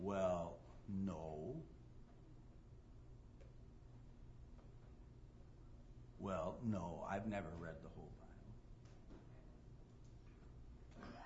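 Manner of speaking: very quiet, almost silent, sheepish voice. Retelling how a woman, asked if she read all the Bible, gives sheepish admission. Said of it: "she kind of sheepishly said".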